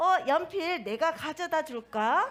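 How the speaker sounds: gentle, warm, kind, helpful tone. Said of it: "이렇게 따뜻하게 이야기를 한다면".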